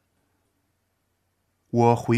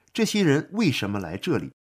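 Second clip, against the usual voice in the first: plain reading voice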